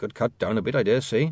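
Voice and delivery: ordinary delivery, nothing marked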